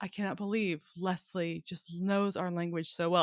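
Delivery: ordinary delivery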